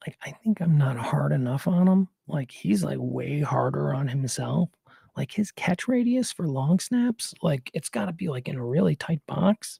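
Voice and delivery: hushed whispering. Speaker whispers about someone who might be listening nearby: whispering. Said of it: "I gotta whisper now".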